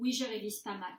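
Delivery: falling statement intonation, pitch drops on mal. Demonstrating French intonation, answering a question as a plain statement: falling intonation. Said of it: "Voice drops".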